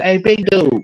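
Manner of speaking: put-on high little-boy voice, calling out. Retelling a comedian's story where a little son comes downstairs: imitating a little boy. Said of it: "the little son come downstairs and say".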